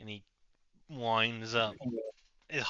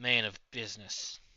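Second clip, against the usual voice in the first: loud put-on old man voice. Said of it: "my old man voice".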